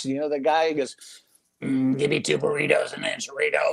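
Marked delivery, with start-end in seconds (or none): 1.6-3.7 mock electrolarynx voice-box voice, slower. Recalling a drive-through job, speaker acts out a customer: imitating a customer's voice-box voice. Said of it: "with the voice box".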